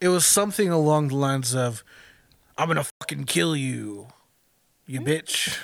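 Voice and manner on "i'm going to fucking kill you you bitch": put-on sinister, creepy, menacing tone. Retelling a caller's threat from a movie phone call: imitating a creepy, murdery tone. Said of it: "He said it in a creepy tone that was very murdery".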